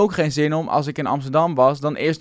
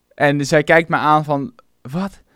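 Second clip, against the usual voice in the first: ordinary delivery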